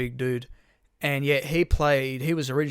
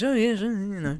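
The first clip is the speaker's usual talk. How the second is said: put-on cartoon baby voice, higher; 7 semitones higher than usual. Showing what the voice sounds like: Stewie Griffin voice. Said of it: "It sounds like Stewie Griffin".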